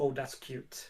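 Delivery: muttered under breath. A character, gestured to a chair by an officer, remarks, muttered under breath. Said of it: "Under his breath".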